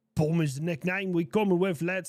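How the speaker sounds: bad fake accent, almost Welsh. Reading a chat message aloud: bad put-on accent, almost Welsh. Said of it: "that was like a Welsh accent almost".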